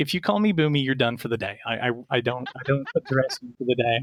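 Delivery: normal talking voice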